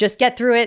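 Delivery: ordinary talk, nothing marked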